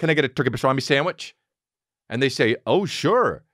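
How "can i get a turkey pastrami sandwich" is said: words rushed and run together into a blur. Retelling ordering a sandwich with the words run together: rushed, run-together words. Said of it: "I run it together. I'm like the Micro Machines man".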